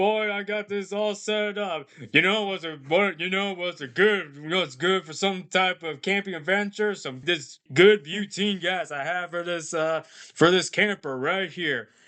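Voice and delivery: fake cartoonish Texan accent. Discussing a movie, the speaker mimics Tom Anderson, voiced by Mike Judge; Tom Anderson impression. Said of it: "who sounds like Hank Hill from King of the Hills".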